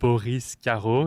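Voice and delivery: French pronunciation. Introducing themself by name to the hosts: French pronunciation of name. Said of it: "in a French accent".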